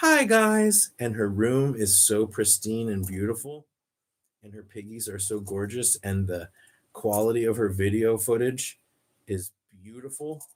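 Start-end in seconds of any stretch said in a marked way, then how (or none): 0.0-0.9 very high-pitched, loud, raised voice. Showing how a recommended guinea pig YouTuber sounds: imitating Squeak Dreams' voice. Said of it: "she sounds like this".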